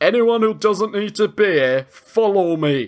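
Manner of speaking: put-on very northern English accent, slow. Describing a film scene, the speaker quotes Sean Bean in a very northern accent. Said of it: "he's in a very northern accent".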